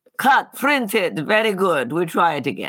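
put-on Hungarian accent. Recalling what he would say while you sat on his lap, in Curtiz's very thick Hungarian accent. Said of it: "he had this very thick Hungarian accent".

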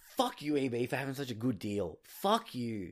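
angry, mad, cursing, ranting outburst. Retelling buying a cheap game with a friend, imitating being mad. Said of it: "Just us being mad".

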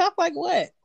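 mock puzzled reply, high-pitched and baffled.

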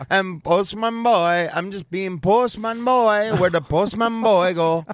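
very high, sudden put-on Caribbean accent. Mocking a man who didn't think about everybody, the speaker does a sudden Caribbean accent imitation. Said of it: "go Caribbean all of a sudden".

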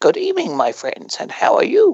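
creepy, clownish horror-host voice, high and swooping. Showing the host character of a horror show: creepy clown voice. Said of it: "a bit of a creepy sort of, like, clown, like, voice".

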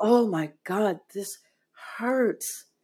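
slow, tearful speech broken by bawling sobs. Retelling a painful moment in a ceremony: retelling own crying. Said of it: "I'm still bawling the entire time".

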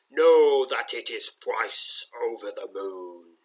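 deep, rumbling, stony voice. Reading a story, voicing a stone face that springs to life: deep, rumbling voice. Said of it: "speaking in a deep, rumbling voice".

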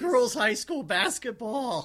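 hoarse, scratchy, strained voice. Show host listing a hectic week after many games, hoarse, strained voice. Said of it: "Oh my God, my voice".

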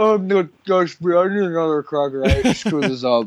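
mock talking while chewing. Imagining the other speaker after communion, mouth full of cracker: imitating talking with mouth full. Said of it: "your mouth is full".

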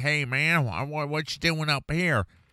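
put-on weird Southern accent. Imitating people born and raised in California: weird Southern accent. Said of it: "a weird Southern accent".

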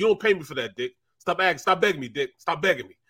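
obstinate, brushing-off tone. Retelling a teammate refusing the coach in the meeting room: imitating Charlie Garner. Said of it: "He was just one of them dudes".

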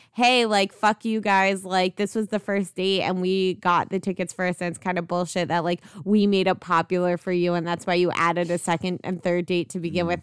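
usual speaking voice

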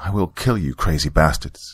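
ordinary delivery, nothing marked

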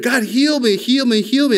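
high, mock desperate, frantic pleading. Recounting praying for healing, retelling desperate begging. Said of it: "I'm just begging like there's no tomorrow".

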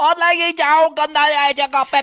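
mock very high, very slow, drawn-out holler. Describing people offering Pepsi from across the room, imitating someone yelling. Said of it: "then they yell across the room".

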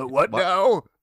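very high, very loud sudden blurt. Imitating the narrator answering an interview question: James Brolin impression. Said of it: "And he'd be like".

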